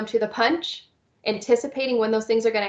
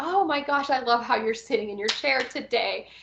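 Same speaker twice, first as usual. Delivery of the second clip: exaggerated, over-the-top, enthusiastic gushing. A speaker demonstrates what they say when they see a child doing something they like: over-exaggerated praise. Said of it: "I over exaggerate the wonderful things".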